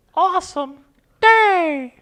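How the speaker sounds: squeaky cartoon-mouse voice. Saying goodbye one word at a time with the others: Mickey Mouse voice. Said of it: "we're all going to do our best Mickey Mouse voice".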